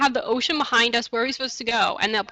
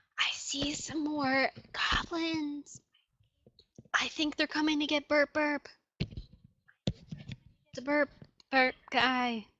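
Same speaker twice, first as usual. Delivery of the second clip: hushed whispering, much quieter; 3 semitones higher, 10 dB quieter than usual. Describing the scene to players as the enemies draw close, whispering. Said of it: "That's why I'm whispering".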